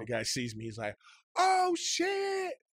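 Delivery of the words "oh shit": mock shrill, very high yell at full volume. Speaker retelling a guy in a hallway recognizing him: retelling a full-volume shout. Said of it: "Like at full volume".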